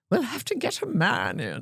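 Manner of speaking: put-on old Australian woman's accent, high, sing-song. Quoting what the other speaker often says, in their grandmother's australian accent. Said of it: "in your grandmother's Australian accent".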